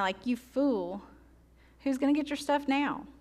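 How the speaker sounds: sorrowful, sad, full of pity. Imagining how a line was meant, the speaker voices it pitying and sad. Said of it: "I wonder if he says it with pity and with sadness".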